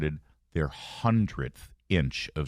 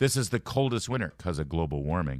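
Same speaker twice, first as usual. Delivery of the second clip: usual speaking voice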